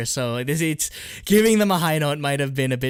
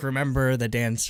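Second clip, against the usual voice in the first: normal talking voice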